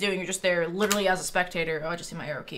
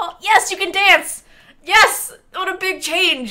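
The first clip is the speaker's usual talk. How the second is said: thrilled booming shout, very loud and very high; 12 semitones higher, 12 dB louder than usual. Reading patch notes aloud and reacting to a new feature: excited shouting. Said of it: "I'm shouting out my window saying yes".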